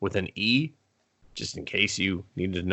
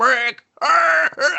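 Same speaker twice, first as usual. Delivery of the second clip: high yell, muffled by a full mouth; 6 dB louder than usual. Retelling a scene where a character yells with his mouth full: imitating a yell with mouth full. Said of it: "How are you yelling? Your mouth's full".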